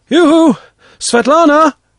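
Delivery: very high, loud, carrying shout. Calling out to Svetlana after reaching dry land past the reeds: shouting. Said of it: "I shouted".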